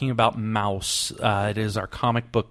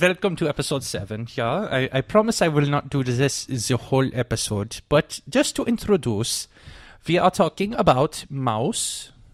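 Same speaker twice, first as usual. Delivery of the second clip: put-on German accent; 3 semitones higher than usual. A host introduces episode seven for German friends, in a put-on German accent. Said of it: "I am doing this for our three thrice German friends".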